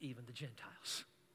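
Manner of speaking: hushed, soft, tiny whisper. Describing what a few radicals say, the speaker adds the last words: little whisper. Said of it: "and then in a little whisper".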